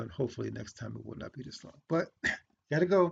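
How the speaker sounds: voice failing and giving out.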